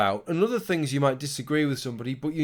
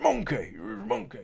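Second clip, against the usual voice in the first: rough-edged, raspy put-on impersonation, slightly higher; 6 semitones higher, 5 dB quieter than usual. Showing off impressions of famous people with a monkey prop: Johnny Vegas impression. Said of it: "there's an impression of Johnny Vegas".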